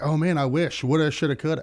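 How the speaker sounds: ordinary delivery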